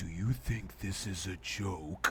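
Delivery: deep, sultry villain voice. Retelling what Xemnas said, in Xemnas's sexy voice. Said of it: "Xemnas said with his sexy ass voice".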